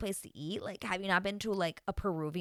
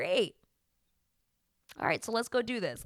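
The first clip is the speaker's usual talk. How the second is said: put-on matter-of-fact tone, no feeling at all. Retelling a dad seeing his daughter in a wedding dress, imitating his flat, emotionless tone. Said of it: "Literally no emotion".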